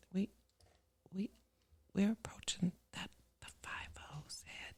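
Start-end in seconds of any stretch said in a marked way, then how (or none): 3.4-4.7 hushed whisper, quieter. Naming how close they are to turning fifty: whispering. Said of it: "I don't know why you gotta whisper that".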